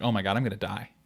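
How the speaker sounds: panicked, frantic voice. Retelling not being able to breathe at a clinic: imitating own past panic. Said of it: "I'm in full panic mode".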